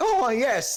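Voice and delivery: over-the-top plummy posh British accent, very high pitch. Describing how americans do british accents, going exaggerated posh british accent. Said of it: "full on, like posh".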